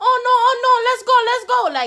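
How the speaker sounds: put-on Latin accent, very high and loud. Retelling a crossing guard urging someone to hurry: imitating a Latin accent. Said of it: "She had the Latin accent".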